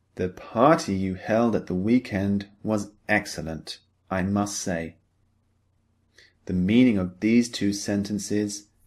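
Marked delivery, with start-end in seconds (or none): none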